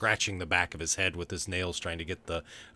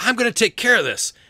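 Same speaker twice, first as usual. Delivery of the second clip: high, booming, full-throated yell; 11 dB louder than usual. The game master voices Rufus, whose yell carries through the office, Rufus yelling. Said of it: "You can hear now Rufus yelling that".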